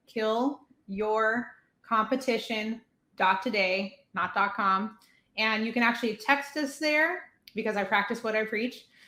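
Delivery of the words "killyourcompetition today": said slowly, unhurried. A guest repeats their website address for listeners, slowly. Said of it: "I'm going to say it again slowly".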